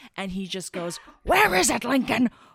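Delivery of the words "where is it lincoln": put-on furious vampire voice, higher and louder. Retelling a movie scene, imitating the enraged vampire villain. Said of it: "he's super mad".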